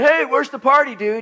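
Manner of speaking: mock-jokey, high-pitched tone. Recounting calling out to a guy yelling from a passing car, retelling a playful joke. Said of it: "jokingly and fun just said".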